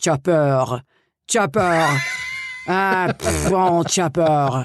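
slow put-on French accent. Retelling how a friend from france speaks english, imitating her french accent. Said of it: "she would say".

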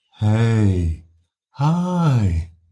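intimate, breathy, unprojected voice. An instructor demonstrates greeting someone who sits down close, intimate unprojected greeting. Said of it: "An intimate sound created without projecting your voice".

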